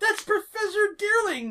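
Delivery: shouting. Voicing someone right behind the player who calls out: shouting. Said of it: "a voice right in your ear shouts".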